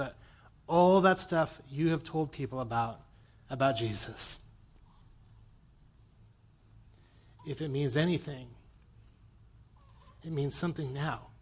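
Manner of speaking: voice catching, choked and tearful. Retelling a pastor's words from a phone call, tearing up. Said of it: "I'm tearing up remembering that conversation".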